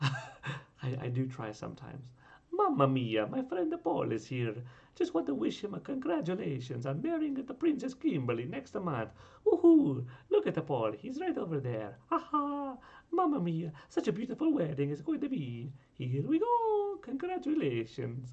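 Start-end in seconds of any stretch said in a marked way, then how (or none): 2.5-18.3 high, loud, swooping character voice. Congratulating your friend Paul on marrying next month, in an attempted Mario voice. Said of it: "in Mario's voice".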